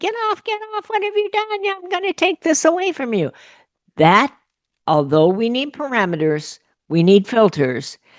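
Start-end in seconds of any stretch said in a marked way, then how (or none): 0.0-3.3 put-on, very high-pitched, shrill, angry scolding yell. Acting out a parent catching a child online: imitating a parent screaming. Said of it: "jumping up and down and screaming and".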